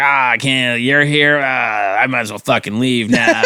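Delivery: slow, joking, teasing mock complaint tone. Retelling running into a bartender friend: retelling own playful teasing. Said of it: "I was just giving her shit".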